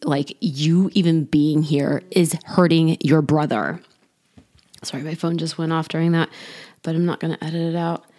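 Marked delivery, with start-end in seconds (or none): 0.4-3.8 nasty, snarling tone. Retelling what a man snarled at the speaker near the prosecutor, imitating a snarling, nasty voice. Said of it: "like in a very like snarling at me, like nasty voice".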